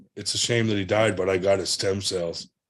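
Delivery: ordinary talk, nothing marked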